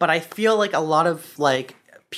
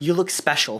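put-on smug tone. Retelling what mom says about a silly outfit: imitating mom's smug tone. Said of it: "she looks at me with a smug smile and she goes".

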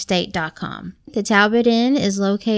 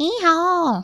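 put-on child screaming, higher; 9 semitones higher than usual. Retelling a younger sister's scream at a cartoon donkey: imitating a child screaming. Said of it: "she screams, she goes".

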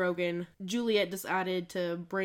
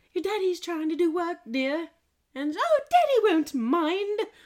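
bad, terrible put-on British accent, pitched up; 11 semitones higher, 6 dB louder than usual. Quoting what she said, in a terrible British accent. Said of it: "It was a terrible British accent".

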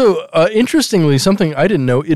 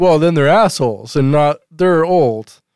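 usual speaking voice

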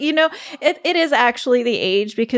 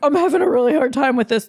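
put-on panicked ranting voice, higher pitch; 3 semitones higher than usual. Retelling how the other speaker reacted to the sickness, imitating someone freaking out. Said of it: "he's all, like, freaking out".

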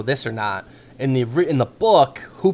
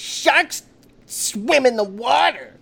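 mocking whiny delivery, higher; 12 semitones higher than usual. Imitating how an actor in the film delivers every line: imitating an actor's whiny line delivery. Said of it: "that's how every line is delivered".

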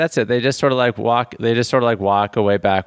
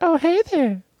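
cartoon pig voice, squeaky, pitched way up. Acting out a pig greeting a man who is cleaning up: pig voice. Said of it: "And the pig's like".

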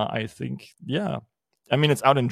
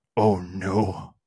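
lower, put-on exclaiming voice; 5 semitones lower than usual. Reacting to a machine-translated blurb: Brian Norton impression. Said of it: "my best, um, Brian Norton impression".

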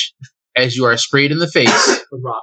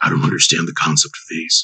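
very deep, gruff, very low superhero growl; 9 semitones lower than usual. Retelling how the bugbears reacted after reading it, in Batman voice. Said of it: "Why did the bugbears sound like Bruce Wayne?".

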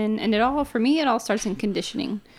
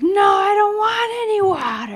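put-on, very high, really aggressive yell; 10 semitones higher, 6 dB louder than usual. Retelling a daughter's answer when asked if she wanted water; mimicking an aggressive yell. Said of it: "yelled at her like really aggressively".

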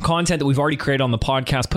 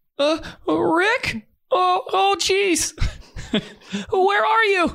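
put-on much higher, slower cartoon teen voice. Host doing impressions for listeners of the show: Morty impression. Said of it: "let me see if I can do a little Morty".

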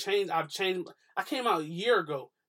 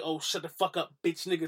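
put-on harsh, cutting tone. Explaining a past argument, showing the way it was not meant: imitating a harsh tone. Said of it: "I didn't mean it in a harsh".

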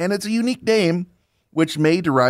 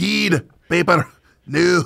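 clumsy, bad, fake put-on Scottish accent; 3 semitones higher than usual. Speaker shows off the accent learned from Scottish interviews, put-on Scottish accent. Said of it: "my Scottish accent".

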